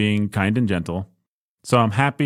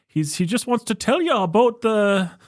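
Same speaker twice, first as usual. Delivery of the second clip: weak, badly put-on Canadian accent; 12 semitones higher than usual. Describing a public figure's dorky presentation: Jordan Peterson impression. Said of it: "I'm not doing a good Jordan Peterson accent".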